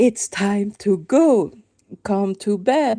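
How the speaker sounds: put-on high-pitched call. Mother recalling calling her little boy downstairs to bed, retelling a raised voice. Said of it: "I really had to raise my voice like".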